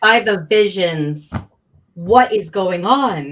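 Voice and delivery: loud, bellowed, in-character yell. After the whistling stops, a player has their character call out, yelling. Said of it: "And then I'm going to yell".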